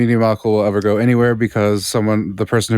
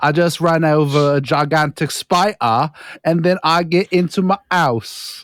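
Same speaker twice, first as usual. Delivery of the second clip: fake Australian accent drifting toward British; 6 semitones higher than usual. Doing an Australian guy in a bit with a friend, bad Australian accent. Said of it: "why is your Australian guy like British?".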